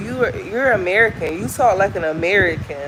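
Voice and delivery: normal talking voice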